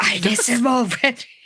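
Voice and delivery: whispering in a character voice. Retelling a book scene where the character whispers: whispering in character. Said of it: "she whispers".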